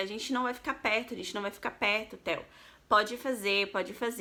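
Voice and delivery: ordinary talk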